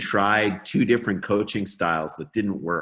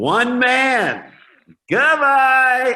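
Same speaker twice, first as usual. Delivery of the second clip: very high, big, loud, swooping and soaring announcer call; 8 dB louder than usual. Retelling the punt return call in Keith Jackson's voice. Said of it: "And then he goes".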